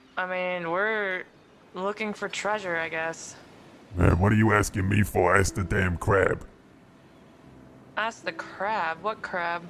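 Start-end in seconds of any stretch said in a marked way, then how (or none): 3.9-6.4 very deep, flat, tired, irritable skull voice. In a game, a woken talking skull answers the players: grumpy talking skull voice. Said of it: "Hey, I'm tired. Come on, put me back to bed".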